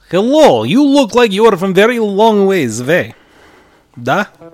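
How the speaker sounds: put-on Russian accent. Voicing a character after giving up on German, in a fallback Russian accent. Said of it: "I'll go to my other fallback accent".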